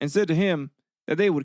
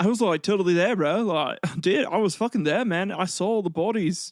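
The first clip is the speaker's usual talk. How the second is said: put-on New Zealand accent, casual bro talk; 3 semitones higher than usual. Acting out a scottish writer's only proof for his tale, in an unintended new zealand accent. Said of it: "I don't know why I'm giving like a New Zealand accent".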